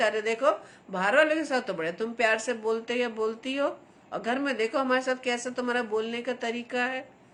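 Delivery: normal talking voice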